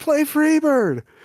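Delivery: shrill, very high-pitched shouting scream. Narrating a scene where a woman in the stands calls out, screaming. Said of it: "One of them screams".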